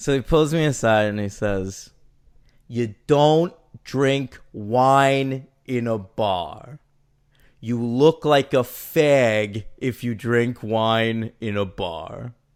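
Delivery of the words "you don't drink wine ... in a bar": slow meathead voice, laid out slowly, "fag" drawn out. Retelling advice from a stranger's boyfriend at a bar: imitating a meathead Guido. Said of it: "meathead, you know, Guido".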